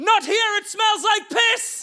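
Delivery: play-acted, very high, drawn-out shriek at top volume. Retelling a proposal gone wrong, imitating a woman screaming. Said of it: "She screams at the top of her lungs".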